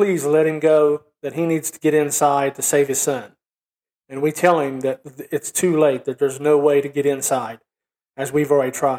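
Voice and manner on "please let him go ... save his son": ordinary delivery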